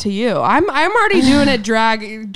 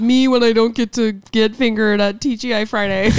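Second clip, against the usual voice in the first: ordinary talk, nothing marked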